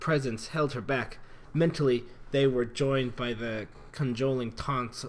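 ordinary delivery

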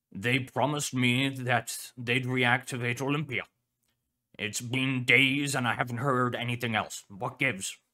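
grumpy, impatient, gruff, irritated growl. An irritated scientist complains to a colleague that a promise was broken and nothing has been heard for days, gruff and irritated. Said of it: "You want a suit? The dog asked. Are you sure? [name] is gonna need it, [name] said. Especially if the Coalition starts stepping up their efforts. Professor Kane Pathos [name] gave a low, angry growl. He slapped his front paw".

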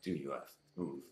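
low grumble, muttered half to himself under breath. Voicing a character with his hand on the doorknob: muttered under breath. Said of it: "says under his breath".

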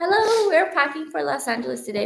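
raspy, sick-sounding voice. Greeting viewers while packing for Los Angeles, croaky sick voice. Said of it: "My voice sounds croaky because I'm sick".

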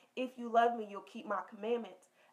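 normal talking voice

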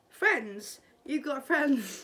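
mock amazed, disbelieving, drawn-out surprised tone. Reacting to a scene, imitating him sounding so surprised. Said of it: "He sounds so surprised".

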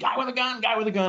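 put-on very high, frantic, hysterical, excited calling. Speaker acts out what a panicked caller tells 911, imitating a hysterical 911 caller. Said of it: "sees this and screams out".

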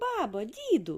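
exclaiming, calling out, high and bright. Narrator reads the hatching dragon's third head calling to its grandparents, exclaiming. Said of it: "вигукнула вона".

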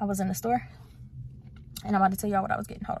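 breathy, winded, breathless murmur, hushed and rushed. Vlogger just back in the car from the store, telling viewers, out of breath. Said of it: "I'm kind of out of breath".

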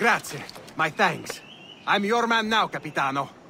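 put-on speaking with Italian accent. Game character addressing his new captain, italian accent. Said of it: "he speaks with the an Italian accent".

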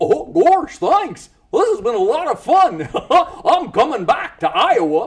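very high, loud, dopey cartoon voice. Showing off different cartoon voices during an interview, Goofy voice. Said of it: "And Goofy".

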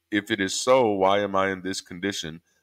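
plain

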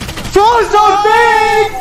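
high, slow, drawn-out yell.

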